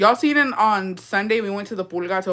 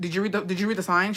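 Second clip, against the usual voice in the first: put-on scolding tone; 4 dB quieter than usual. Retelling how a shop worker answered a request for beer: imitating someone scolding. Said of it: "yelled at him and, like, was scolding him".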